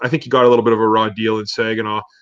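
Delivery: ordinary talk, nothing marked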